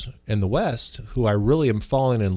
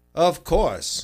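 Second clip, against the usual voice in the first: sportscaster announcer voice, pitched up higher; 6 semitones higher than usual. Answering a request to do a Howard Cosell voice. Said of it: "Do it in your Cosell voice".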